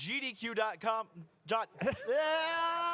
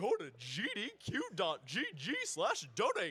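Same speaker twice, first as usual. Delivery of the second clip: put-on dopey cartoon dog voice; 4 semitones lower, 4 dB quieter than usual. Asked by the host to plug the donation link, doing a Goofy impression. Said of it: "with your best Goofy impression".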